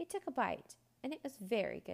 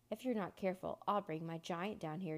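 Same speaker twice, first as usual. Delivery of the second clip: plain reading voice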